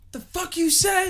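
high, angry, shouted yell.

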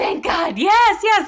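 very high, loud, drawn-out relieved yell. Retelling getting money from an ATM after two hours: retelling a yell. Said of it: "I'm like yelling in a casino".

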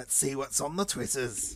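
put-on creepy cockney demon child voice. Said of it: "We do evil cockney child demon voice".

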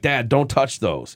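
sharp, put-on hollering. Retelling a son's warning about hot peppers: imitating son hollering. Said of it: "he hollers".

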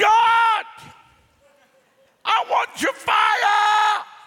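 very loud, high, very slow, drawn-out desperate shout. Telling an audience how the speaker once cried out to God: retelling a shout. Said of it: "but I shouted".

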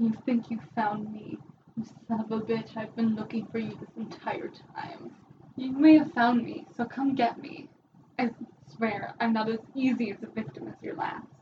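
fast muttering under the breath, to himself. A character stands up from a sulfur-smelling imprint, mumbling to himself. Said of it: "just kind of mumbles, not entirely expecting to be heard".

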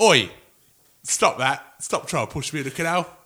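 put-on tough lad's strong Manchester accent. Imagining a strong Manchester lad fighting off the canal pusher: imitating a strong Manchester lad. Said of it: "Some strong Manny boy would have said".

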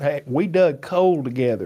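imitated heavy Southern accent. Describing an actor's usual voice, quoting him in strong southern accent. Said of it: "he's got this strong Southern accent".

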